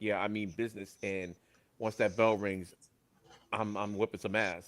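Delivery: ordinary talk, nothing marked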